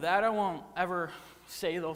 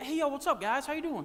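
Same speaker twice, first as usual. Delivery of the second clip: casual, breezy, easy tone, pitched up; 7 semitones higher than usual. Retelling Jesus greeting two followers on the road, acting casual as Jesus. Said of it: "Jesus just casually happens to be like".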